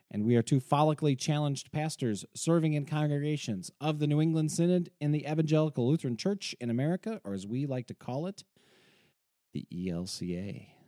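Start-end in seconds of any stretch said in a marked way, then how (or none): 7.2-10.6 hushed, sinister, creepy spooky voice. Pastor co-hosting a show, naming their church, in a slightly creepy voice. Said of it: "that sounded a little creepy".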